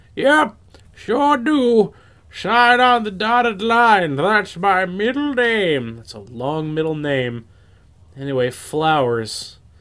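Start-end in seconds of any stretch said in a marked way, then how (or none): 0.2-6.0 put-on very high-pitched old-man voice. Accused of weasel words by the player, Clown Grandpa answers in an old-man voice. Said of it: "Old man".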